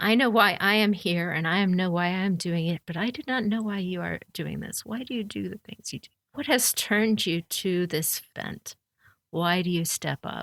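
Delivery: composed, unruffled, calm, fast-moving delivery. Player's character, sword drawn, tries to persuade an opponent to give up, calm. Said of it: "And I will say in a calm manner".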